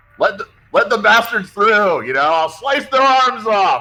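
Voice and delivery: shrill, high, screamed-out battle cry. Playing a dwarf in a game, shouting a battle cry at enemies: battle cry scream. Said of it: "I'm gonna scream out".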